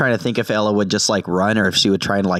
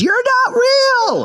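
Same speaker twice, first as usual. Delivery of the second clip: very high, piercing, shrill scream; 4 dB louder than usual. Voicing a character who sprints at an enemy with a knife: screaming in character. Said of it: "she just screams".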